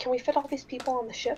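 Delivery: soft, hushed half-whisper. A game master's character leans in to half-whisper to another character, half-whispering. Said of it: "and whisper".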